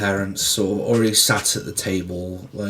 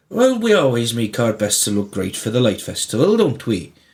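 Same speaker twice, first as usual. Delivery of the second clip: put-on Welsh-accented old man voice; 2 semitones higher than usual. Answering a question about a festival outfit, speaking in a welsh accent. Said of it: "Why is he Welsh?".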